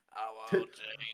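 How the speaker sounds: loud voice-box robot voice. Showing the others a robot voice. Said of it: "that's my robot voice".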